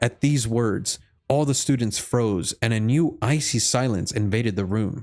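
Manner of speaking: plain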